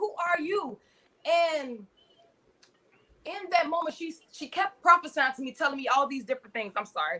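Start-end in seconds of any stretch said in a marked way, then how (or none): 0.0-0.8 light, high cried-out voice. Retelling pointing at a prophesying lady: imitating own past scream. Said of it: "Literally screaming".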